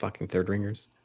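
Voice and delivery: low grumbled mutter under the breath, barely audible. Retelling his reply when guards at attention demanded his business, muttered under breath. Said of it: "Under my breath".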